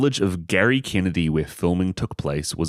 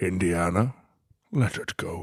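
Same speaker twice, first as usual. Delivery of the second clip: put-on Scottish actor voice; 4 dB quieter than usual. Hosts trading impressions of a movie line, Sean Connery impression. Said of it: "If you talk like Sean Connery".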